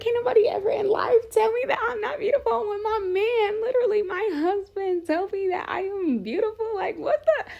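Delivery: high, squealing excited disbelief.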